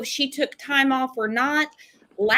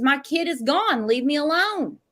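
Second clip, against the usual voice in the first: normal talking voice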